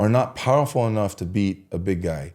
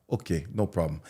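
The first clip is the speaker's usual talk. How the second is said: put-on soft, low-key, horrible Russian accent; 3 semitones lower, 8 dB quieter than usual. Retelling how a man answered after being hit in the chest, in a horrible Russian accent. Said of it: "my Russian accent's horrible".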